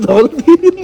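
high, laughing exclamation.

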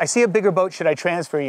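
plain

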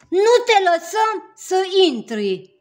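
very loud, very high chorus of voices yelling together. The objects in Alex's room, all at once to him: shouting in chorus. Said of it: "au început să strige cu toate în cor".

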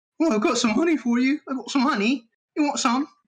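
put-on pitch way up, British accent. Joking about meeting a bear, the speaker does a British Pooh Bear voice. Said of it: "British Pooh Bear".

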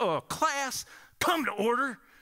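put-on heavy, thick Southern accent pitched way up. Retelling the man's first words as he turns from the whiteboard, in a thick southern accent. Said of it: "he had this thick Southern accent".

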